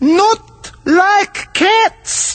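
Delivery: very high, shrill, passionate mouse-like squeaky cry. Reading the story aloud, the mouse cries back at Alice in a shrill, passionate voice. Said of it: "cried the mouse in a shrill, passionate voice".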